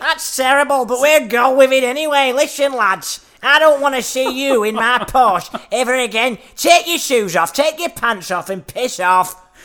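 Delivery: poorly faked Manchester accent. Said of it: "Is that Manchester".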